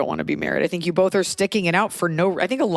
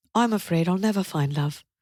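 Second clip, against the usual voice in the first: put-on British accent, said plainly; 3 dB quieter than usual. Redoing a line after being told the accent sounded Irish: British accent. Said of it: "That could still be British".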